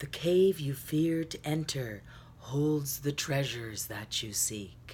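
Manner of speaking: polished voiceover narrator voice. Quoting a saying with the speaker's best effort, in a voiceover voice. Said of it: "I'm going to say it with my best voiceover voice".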